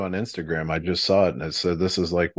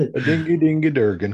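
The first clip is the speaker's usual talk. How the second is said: pitched-up fake Swedish accent, nonsense words; 9 semitones higher, 4 dB louder than usual. Repeating the joke after another speaker names it: Swedish Chef voice. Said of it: "That was my Swedish ac-".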